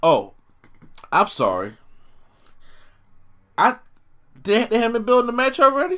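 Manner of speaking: sarcastic, very high, swooping feigned surprise. Answering a question about when a match will be built: sarcastic. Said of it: "I'm being sarcastic".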